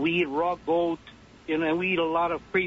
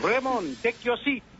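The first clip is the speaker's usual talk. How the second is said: put-on thick Filipino accent, trilled r's; 6 semitones higher than usual. Recalling his teacher calling him out in class, imitating Dr. Hidalgo's rolled R's. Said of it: "so he would roll those R's".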